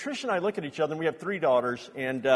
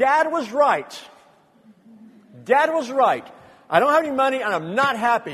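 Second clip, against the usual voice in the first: very loud, high, furious yell at full volume; 9 semitones higher, 8 dB louder than usual. Speaker reenacting the time they yelled at God, retelling an angry yell. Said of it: "And I yelled".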